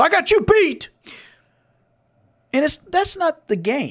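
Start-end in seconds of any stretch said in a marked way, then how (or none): 0.0-0.9 put-on high, loud, cocky, boastful drunk voice. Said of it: "And he goes".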